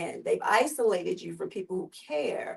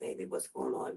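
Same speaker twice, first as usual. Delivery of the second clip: soft, breathy whisper, under the breath; 7 dB quieter than usual. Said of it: "she just kept whispering".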